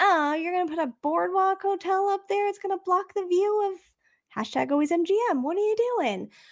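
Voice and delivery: high, incredulous, mock indignant complaining tone.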